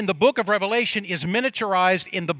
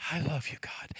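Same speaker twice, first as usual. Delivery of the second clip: imitated murmur under breath, lower and quieter; 4 semitones lower, 13 dB quieter than usual. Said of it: "just under her breath".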